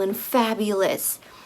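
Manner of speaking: ordinary delivery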